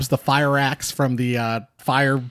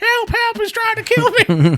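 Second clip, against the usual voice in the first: very high, swooping, taunting mocking scream. Recapping a scene where a homeless lady echoes someone's cries: mocking cries for help. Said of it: "Like mockingly".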